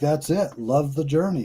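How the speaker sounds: normal talking voice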